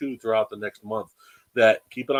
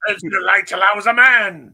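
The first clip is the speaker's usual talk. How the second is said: big, clumsy, badly done shout, pitched up; 8 semitones higher, 9 dB louder than usual. Asking whether a character will come out like Bane, terrible Bane impersonation. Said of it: "Such a terrible impersonation of Bane".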